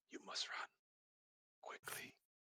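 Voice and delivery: barely voiced, hushed, very quiet whisper. Describing a yellow-eyed creature as it turns, repeating its words whispering. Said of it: "you can hear him whispering".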